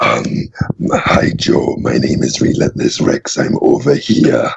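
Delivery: villain voice with an Austrian accent. Actor playing the T-Rex Relentless Rex introduces himself, Shredder-like Austrian accent. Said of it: "kind of like an Austrian accent".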